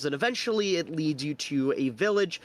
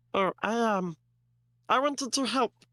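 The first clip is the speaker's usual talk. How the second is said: small, high, peeping little creature voice; 6 semitones higher than usual. Voicing Glebnor peeping up under the table: Glebnor voice, peeping. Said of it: "Glebnor peeps up and goes".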